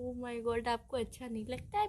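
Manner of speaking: sudden switch to low, soft, sweet tone.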